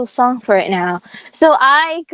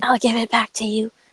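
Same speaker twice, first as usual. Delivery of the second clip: hushed, confiding, soft stage whisper; 2 semitones lower, 5 dB quieter than usual. Retelling a teacher's words while she took the paper: imitating a half-whisper. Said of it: "she whispered to me".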